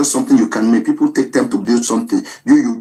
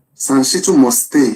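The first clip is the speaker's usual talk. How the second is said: plain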